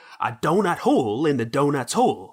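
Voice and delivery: put-on Southern American accent. Doing a Daniel Craig impression with a Southern accent. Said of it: "a uh, Daniel Craig impression with a southern accent".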